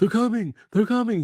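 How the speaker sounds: frantic, panicked, shrill, very high yell. Retelling a man running up to the car, imitating frantic panic. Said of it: "He's freaking out".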